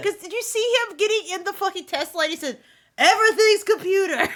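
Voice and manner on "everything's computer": very loud, booming, with an odd rhythm. Quoting what he said getting in the Tesla: imitating Trump's cadence. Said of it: "your cadence is so funny".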